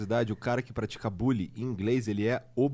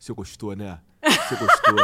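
very loud teasing, swinging the pitch; 10 dB louder than usual. Retelling an exchange between Eduardo Bolsonaro and Frota, doing a Frota impression. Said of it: "a imitação de Frota é muito boa".

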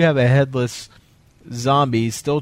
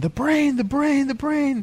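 shrill, very high, repeated shouting; 14 semitones higher than usual. Retelling how two movie characters keep calling out: imitating someone shouting. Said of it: "they're just shouting".

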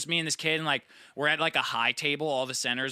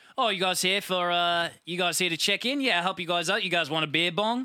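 put-on Australian bloke voice, accent pitched up; 5 semitones higher than usual. Retelling what an australian guy said at campground check-in, australian accent. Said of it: "That's actually a really good".

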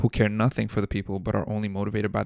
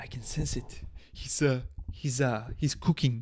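put-on French accent in English; 3 semitones higher, 5 dB quieter than usual. Imitating a football legend's line from a clip: Thierry Henry French accent. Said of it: "With that French accent".

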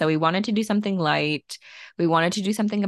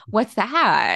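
eager, super excited, chipper tone; 4 semitones higher, 4 dB louder than usual. Retelling Ogie's reply to the speaker's question, imitating Ogie's excited chipper voice. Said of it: "in their like super excited, like chipper voice".

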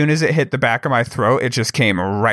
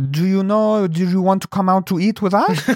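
put-on French accent, pitched higher; 8 semitones higher than usual. Asked to do the accent, retelling what two french backpackers said; imitating a french accent. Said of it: "can you do the accent?".

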